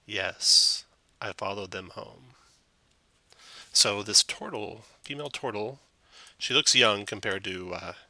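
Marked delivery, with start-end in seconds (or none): 0.1-2.3 eerie, flat, even drone with no lift. Narrating a story, voicing a girl who answers in an eerie monotone voice. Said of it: "says in an eerie monotone voice".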